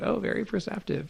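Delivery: hushed, breathy, secretive whisper. Retelling a remark made to them during a show: imitating someone speaking quietly. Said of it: "he said it very quietly to me".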